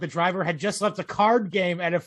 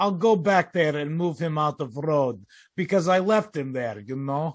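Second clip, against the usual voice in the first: put-on Eastern European accent, lower pitched; 3 semitones lower than usual. Reporting a driver's words after hitting a deer, the reader quotes him in an Eastern European accent. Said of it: "who had an Eastern European accent".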